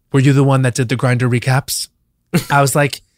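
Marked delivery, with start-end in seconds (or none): 0.1-1.9 acted whispering voice. Retelling a question someone asked into the speaker's ear: imitating a whisper. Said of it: "she whispers in, in my ear".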